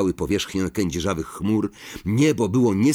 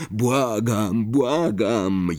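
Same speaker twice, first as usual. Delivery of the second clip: groaning through gritted teeth. Narrator voicing the driver pleading as the car jerks over the lake, moaning through clenched teeth. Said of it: "jęknął Ron przez zaciśnięte zęby".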